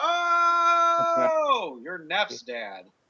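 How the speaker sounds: very high, thrilled shout, "oh" stretched long. Player's character greets Neff's father and shakes his hand, yelling. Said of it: "As I'm yelling".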